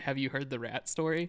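ordinary talk

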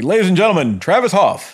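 emcee-style announcer voice. Thanking supporter Travis Hoff, a co-host shows how an announcer would say it: announcer voice. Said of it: "it sounds like an announcer would be like".

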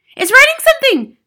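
very high, very loud, shrill, hysterical shriek. Nigel sees chalk hovering at the blackboard, hysterical, shrill scream. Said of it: "screamed Nigel".

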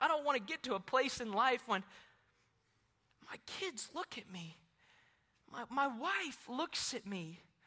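very soft, very quiet, moved and emotional. Preaching about faith and his family, the speaker apologizes for being emotional. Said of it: "I'm emotional today".

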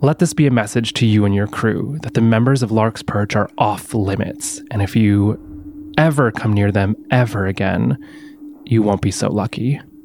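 menacing, threatening stage whisper, very close. A character half-whispers a warning into a man's ear: menacing half-whisper. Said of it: "I'll go whisper in his ear".

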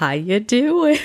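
high, bright voice with an audible smile. Greeting listeners at the start of an episode, smiling while talking. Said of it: "hear me smiling through the podcast".

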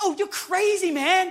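put-on almost-angry tone. Retelling a man's reaction in a conversation, imitating him almost angry. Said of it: "he was almost angry".

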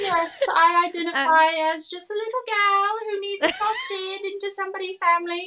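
odd, put-on British accent, little Victorian child voice. Speaker voices a vintage pigeon girl in a bit, weird british accent. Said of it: "now I am doing some sort of weird British accent".

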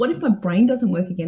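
ordinary delivery

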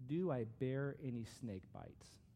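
slow reading pace with long pauses. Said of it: "I'm gonna read them slowly".

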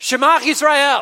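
loud, passionate, slow, high-pitched calling out. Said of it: "we're gonna say this loudly".

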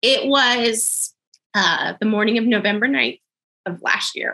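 crying, tearful voice with "was" drawn out. Telling the story of a day, the speaker starts crying. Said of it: "I'm going to start crying too".

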